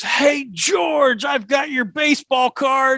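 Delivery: high, drawn-out, top-of-lungs yell. Retelling calling out to a player at a first ballgame: imitating yelling at top of lungs. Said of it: "I yelled at the top of the lungs".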